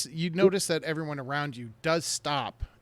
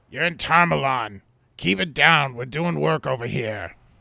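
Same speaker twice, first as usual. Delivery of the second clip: loud, gruff, put-on fantasy dwarf voice; 7 dB louder than usual. Voicing a market-stand dwarf answering a player: gruff dwarf voice. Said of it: "a rather gruff-looking dwarf at a stand goes".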